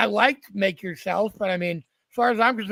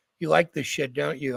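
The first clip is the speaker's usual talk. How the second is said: acted-out whisper, as if in the ear; 5 semitones lower than usual. Retelling what he whispered in his ear in the green room: retelling a whisper. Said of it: "he whispers in my ear".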